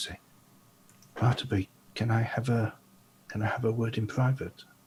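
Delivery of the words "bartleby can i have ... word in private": character voice in a whisper. As Gulliver, going over to Bartleby to speak privately, whispering. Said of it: "he's going to whisper to Bartleby".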